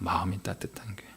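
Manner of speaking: low, quiet whisper.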